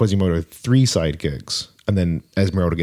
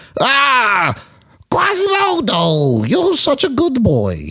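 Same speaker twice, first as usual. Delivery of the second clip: very high, swooping old cartoon gargoyle voice. Showing the other speaker the final of three gargoyle voices, old gargoyle voice. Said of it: "This is my final gargoyle voice".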